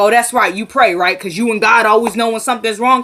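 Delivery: mock snide, sneering, sarcastic tone. Retelling a son's reply to his mother: imitating a sarcastic remark. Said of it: "trying to be sarcastic".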